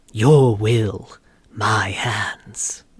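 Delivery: low, breathy character voice. Speaker quotes one of a character's new lines in a deep, breathy voice. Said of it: "It's kind of like deep, a little breathy".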